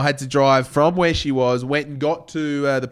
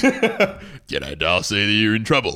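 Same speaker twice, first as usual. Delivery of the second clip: put-on deeper, lower persona voice; 4 semitones lower than usual. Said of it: "Man cam is a lower voice".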